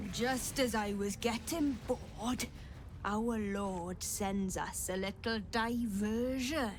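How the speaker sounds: put-on Welsh accent character voice. In a role-play game, a character addressing the arriving party, Welsh accent. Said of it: "Is that a Welsh accent?".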